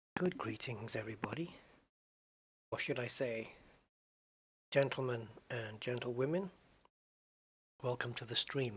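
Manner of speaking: speaking quietly. Welcoming the stream while a viewer has a headache: speaking quietly. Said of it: "I'm talking quiet because of Gain Damage's headache".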